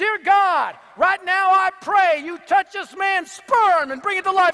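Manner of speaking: high, loud, full-throated group scream. Retelling how a group prayed over him: imitating someone screaming. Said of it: "they start screaming".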